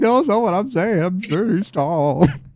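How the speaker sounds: put-on high, sobbing, tearful child's crying voice. Acting out what the kids said back to him, imitating kids trauma crying. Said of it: "the kids just like fucking trauma crying".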